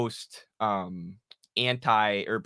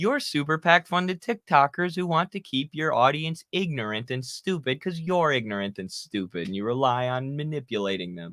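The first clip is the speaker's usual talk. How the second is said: acted, sugary, nicest-possible sweet voice; 3 semitones higher than usual. Retelling their own insults toward TikTokers, imitating a super nice voice. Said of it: "in like the nicest voice".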